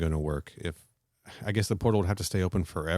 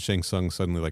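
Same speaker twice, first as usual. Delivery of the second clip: plain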